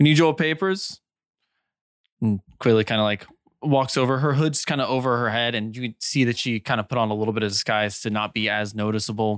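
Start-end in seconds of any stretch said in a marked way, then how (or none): 0.0-1.0 calling out loudly. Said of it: "one of them calls out".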